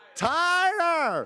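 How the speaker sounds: very high-pitched shrill shout. Retelling a family story, dad calls out instructions: imitating dad yelling. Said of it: "he's yelling".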